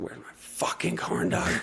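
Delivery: mock very high, ragged, raspy burst of rage. Retelling complaining on stage about a missing corn dog: imitating own angry rant. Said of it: "the most angry I've ever gotten on stage".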